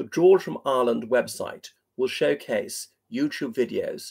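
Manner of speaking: very posh, plummy upper-class British accent. Repeating a passage with the plum factor tuned up, very posh british accent. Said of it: "I'm going to tune up the plum factor. So check this out".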